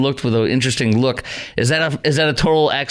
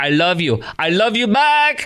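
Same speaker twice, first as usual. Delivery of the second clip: mock put-on Spanish accent, higher; 4 semitones higher than usual.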